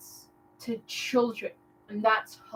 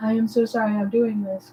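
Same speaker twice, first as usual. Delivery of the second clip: plain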